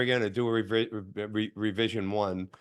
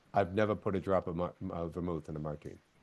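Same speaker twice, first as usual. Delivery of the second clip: soft, confiding half-whisper under the breath; 5 semitones lower, 8 dB quieter than usual. Retelling what Dennis half-whispered while pouring a drink: imitating Dennis half-whispering. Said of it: "kinda whispers to me".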